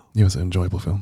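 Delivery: pretend stage aside. Admitting a secret as a joke while the other listener pretends not to hear: mock quiet aside voice. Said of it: "Could you do an aside?".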